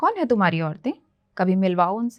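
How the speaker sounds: fast, naive, guileless, innocent voice. Telling your show's audience how you once answered a friend, retelling an innocent question. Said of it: "मैंने मासूमियत से पूछा".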